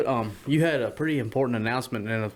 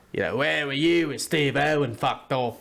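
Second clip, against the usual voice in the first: gravelly, rough, drawling Scottish-Irish brogue; 3 semitones higher than usual. Explaining to the others how to do an accent; gravelly drawling accent. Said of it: "you put a bit of a drawl to it, and yeah, you make it gravelly".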